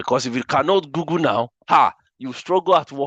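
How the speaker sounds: English spoken with a Nigerian accent. Instructor addressing an audience about the class, in a nigerian accent. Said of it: "I'm using my Niger accent here".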